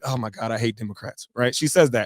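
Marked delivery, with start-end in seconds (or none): 0.0-1.3 muttered under breath, lower and quieter. Retelling what a coworker blurted out on a call: imitating muttering under breath. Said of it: "kinda under her breath".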